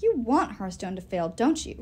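plain

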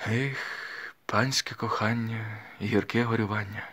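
slow, faint, barely audible half-whisper. Narrator reading a story, a mother pressing her daughter close: barely audible half-whisper. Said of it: "прошепотіла ледь чутно".

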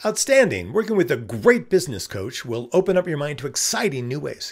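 expressive, emphatic reading, high and punchy.

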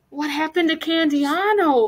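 ordinary delivery, nothing marked

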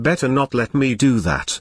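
grumbling, complaining tone. A narrator reads a character's reply to another's remark, grumbling. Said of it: "grumbled Jenny".

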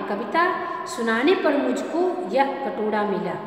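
usual speaking voice

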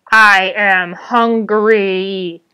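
blood-curdling, hungry, drawn-out monster spider bellow. A narrator reads the great spider's cry: blood-curdling bellow. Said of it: "bellowed the great spider in a blood-curdling voice".

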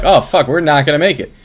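plain

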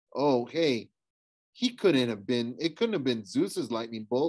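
plain

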